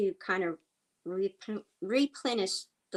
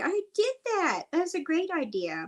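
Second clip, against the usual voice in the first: mock laughing the words out, very high, swooping; 10 semitones higher, 4 dB louder than usual. Retelling own reply to a friend's planter suggestion: laughing while quoting self.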